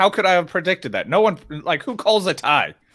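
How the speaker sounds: ordinary delivery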